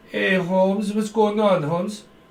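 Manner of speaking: failed fake Mexican accent. Admitting they can't do it, the speaker tries a bad Mexican accent. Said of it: "I can't do a Mexican accent".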